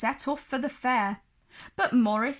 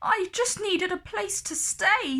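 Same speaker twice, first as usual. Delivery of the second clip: meek, shrinking, timid, high-pitched little voice; 8 semitones higher than usual. Reading a story aloud, Morris answering the beast, timid Morris voice. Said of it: "said Morris timidly".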